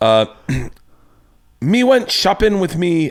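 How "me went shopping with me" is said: clumsy put-on Irish accent, high, drifting pirate-ish. Retelling a joke that brought the house down, in a put-on Irish accent. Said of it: "I'm going to do my Irish accent".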